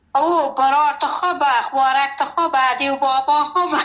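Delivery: ordinary delivery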